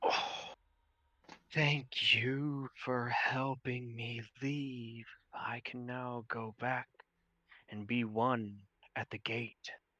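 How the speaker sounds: eight voices speaking together in unison. A controlling force speaks to the group through eight voices at once. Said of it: "out of all 8 of their voices".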